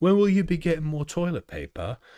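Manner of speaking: put-on English accent, pitched high. Speaker imitating customers asking about toilet paper, in a put-on English accent. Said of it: "I need to do an English an, an English accent".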